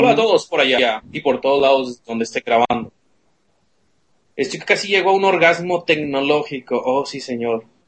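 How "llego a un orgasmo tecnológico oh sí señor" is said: ordinary talk, nothing marked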